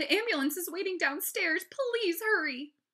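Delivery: shrill, very high, very loud wailing cry. Mom speaks to Henry as the elevator arrives, wailing. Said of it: "Mom wailed".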